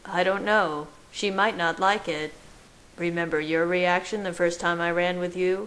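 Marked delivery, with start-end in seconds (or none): none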